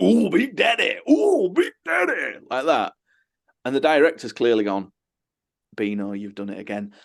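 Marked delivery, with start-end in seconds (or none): 0.0-2.4 very high, very slow, sing-song funny put-on voice. Retelling a bit from the making of something, funny put-on voice. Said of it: "he says it in this funny voice".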